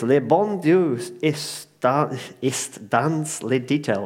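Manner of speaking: put-on slow French spoken with a German accent. Quoting a french saying to the audience: french with a german accent. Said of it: "you're saying it in a very German way".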